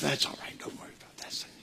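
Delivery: whispering devil voice. Acting out the devil tempting someone: whispering devil voice. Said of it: "he starts out whispering".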